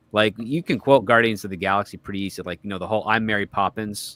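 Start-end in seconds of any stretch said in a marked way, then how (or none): none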